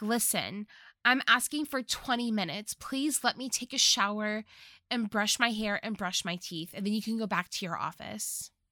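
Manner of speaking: normal talking voice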